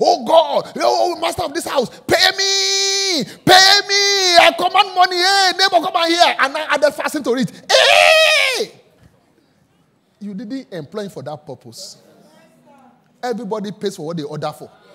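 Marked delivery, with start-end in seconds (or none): 0.0-8.7 shrill, booming, very loud, high, drawn-out shout. Describing a hired grass-cutter knocking at the door demanding money, imitating a man shouting. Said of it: "And he's shouting".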